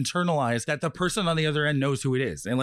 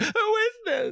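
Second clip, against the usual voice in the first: very high, scared, frightened horror-heroine voice. Retelling how he was mocked on the phone: imitating a stalked horror heroine. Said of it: "I sounded like a heroine in a horror movie being stalked".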